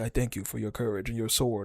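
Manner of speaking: dead-serious, earnest, heartfelt and sincere. Retelling a scene, quoting the character dead serious: imitating Thor sounding sincere. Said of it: "he is being real dead ass and sincere".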